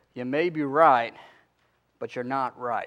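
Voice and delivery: southern twang with words drawn out. Retelling what a friend from tennessee said after an argument: imitating a southern twang. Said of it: "in his southern twang".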